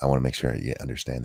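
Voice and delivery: dramatic whisper. Joking about earning an Oscar mid-conversation: dramatic whisper. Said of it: "I'm gonna whisper at you for a minute".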